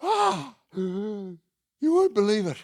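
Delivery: huffing and puffing hard, very high voice. Telling a story, quoting the guy as he comes in: imitating Bill huffing and puffing. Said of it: "he came in huffing and puffing".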